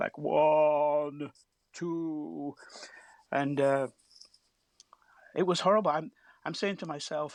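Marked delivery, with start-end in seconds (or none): 0.0-2.5 mock-drunk voice, much slower. Retelling how a man with a machine gun began a countdown, imitating a drunken countdown. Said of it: "in a drunken voice".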